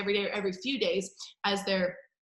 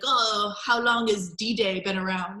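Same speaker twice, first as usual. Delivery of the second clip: slow, drawn-out, put-on French accent; 4 dB louder than usual. Retelling a friend's trip, the speaker quotes a french restaurant man, imitating a french accent. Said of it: "the French guy in his French accent".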